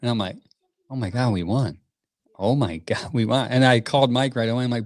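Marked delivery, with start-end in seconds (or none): none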